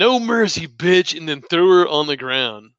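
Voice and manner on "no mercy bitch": half-hearted, high-pitched, mild yell. Retelling a fight, acting out what she yelled, retelling a yell. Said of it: "she yelled like".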